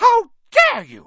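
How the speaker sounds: piercing shrill shriek, very high and very loud. Narrator reads a girl's reply to an insult amid an uproar, shrieking. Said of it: "Alicia shrieked".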